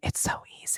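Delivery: barely audible, very soft, voiceless whisper. Demonstrating whispering while talking about vocal struggle: whispered. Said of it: "This is me whispering".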